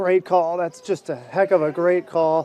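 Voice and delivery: mock, very sarcastic, complimenting tone. Retelling a coach's remark to the official, imitating sarcastic praise. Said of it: "He was very sarcastic with the official".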